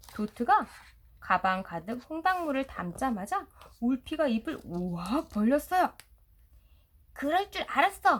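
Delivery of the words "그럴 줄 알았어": sudden, high, loud shout. A narrator reads Dot shouting as Wolfie opens his mouth wide, shouted. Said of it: "도트가 소리쳤어요".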